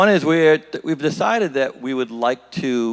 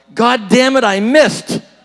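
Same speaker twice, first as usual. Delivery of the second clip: yelled, much higher-pitched and louder. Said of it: "and he yells".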